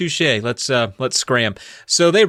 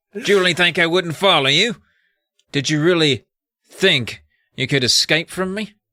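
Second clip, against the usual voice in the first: put-on British accent, higher; 6 semitones higher than usual. Voicing the caped man who waits in a hallway: put-on british accent. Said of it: "I gotta work up a British accent".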